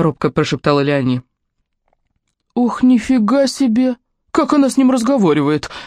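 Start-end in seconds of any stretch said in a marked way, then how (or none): 2.5-5.7 high, exclaimed outburst. Hearing how Léonie talks to Edmond, another man reacts, exclaiming. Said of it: "воскликнул Тюрке".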